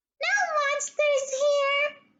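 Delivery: tiny, squeaky, very high voice. Reading a story: a voice from inside a dresser drawer answers the girl, tiny voice. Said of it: "said a tiny voice from inside the drawer".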